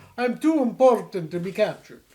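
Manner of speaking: bad put-on vampire accent. Retelling what a woman said when leaving Fred and Barney, bad Dracula-like accent. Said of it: "I did her accent bad, although she does kind of sound like Dracula".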